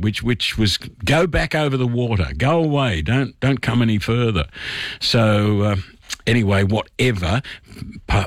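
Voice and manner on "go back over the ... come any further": ordinary talk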